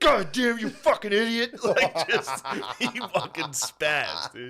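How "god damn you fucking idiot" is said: high, loud, frantic, furious outburst. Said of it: "Phil spazzed".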